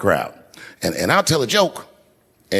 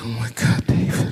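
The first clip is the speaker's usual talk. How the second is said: imitated crying. Retelling what a crying woman said to him, imitating her crying. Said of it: "And she's crying".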